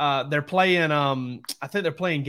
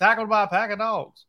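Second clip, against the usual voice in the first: put-on old-timey small-town stadium PA announcer, pitched up; 6 semitones higher than usual. Retelling how a local PA announcer called games: imitating Ray Fussell's PA announcing. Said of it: "And Ray Fussell talked like this".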